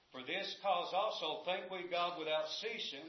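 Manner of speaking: usual speaking voice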